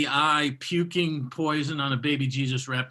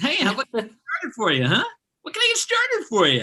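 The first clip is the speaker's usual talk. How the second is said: mock relentlessly cheerful server voice, higher; 9 semitones higher, 3 dB louder than usual. Imitating a relentlessly cheerful barista greeting a customer: imitating relentlessly cheerful barista. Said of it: "They're like".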